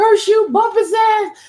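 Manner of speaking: high, loud furious scream.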